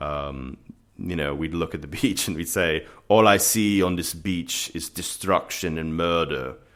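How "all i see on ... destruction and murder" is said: put-on German accent. Recalling doing impressions while looking at a beach: Herzog impression, German accent. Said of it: "that would be me trying to do Herzog".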